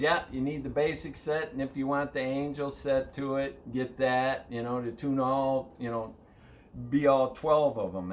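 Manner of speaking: ordinary talk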